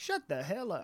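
blunt, flat-out, to-the-point delivery. Picturing a movie scene with the character: Samuel L. Jackson impression. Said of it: "I could just picture Sam Jackson just being like".

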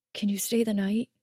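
ordinary delivery

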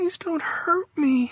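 put-on whining small-child voice, very high. Reading a story where a woman whines during a nightmare: whiny little girl voice. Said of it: "In a little girl voice, she whined".

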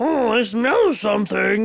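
slow, drawn-out game monster voice. Imitating the super mutants from Fallout: super mutant voice. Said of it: "They're always like".

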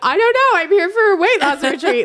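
giggling through the words. Retelling what a celebrity answered reporters, imitating someone laughing while talking. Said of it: "laughing her head off".

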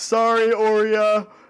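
high in-character yell, shouted from a distance. Voicing someone who yells from outside the smoke: in-character yell. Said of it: "you hear a voice from outside of it yell".

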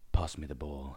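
put-on deep dulcet tones. Acting out a football game after a friend's remark, put-on deep dulcet tones. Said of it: "because my deep, dulcet tones".

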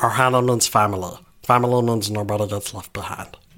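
put-on cartoon alien voice. Remembering showing off to the guys, the speaker does a Stitch impression. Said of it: "I remembered being like".

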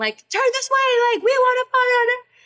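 put-on high yelling. Recounting walking up the stairs past the paparazzi, retelling paparazzi yelling. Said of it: "the paparazzi are like yelling".

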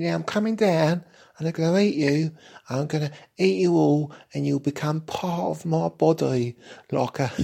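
put-on very high-pitched, camp London accent. Narrating a story, voicing the cobweb coming down: camp London accent. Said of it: "in a rather camp London accent".

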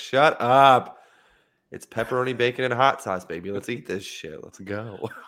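mock fed-up, aggravated, slow and deliberate. Retelling a husband's reaction to someone screaming, mock-aggravated husband. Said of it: "husband was just fucking aggravated".

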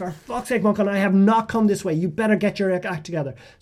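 high, furious, roaring scolding tone.

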